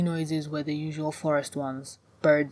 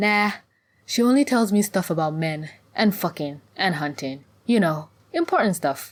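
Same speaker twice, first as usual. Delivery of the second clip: ordinary delivery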